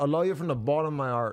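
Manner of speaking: almost-Irish accent, dropping H sounds. Showing how some people don't pronounce their h's, almost-irish accent. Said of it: "So it's almost Irish".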